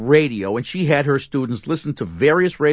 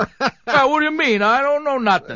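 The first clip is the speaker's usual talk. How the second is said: put-on New York tough-guy street-talk accent; 11 semitones higher than usual. Discussing an actor's accent in a movie, the speaker mimics a new york hoodlum voice. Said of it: "He sounds like a New York hoodlum".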